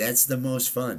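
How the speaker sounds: plain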